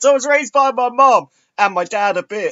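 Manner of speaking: mock tearful, high, choked-up blubbering crying voice. Quoting a man complaining about his dad; imitating him crying. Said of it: "crying about that".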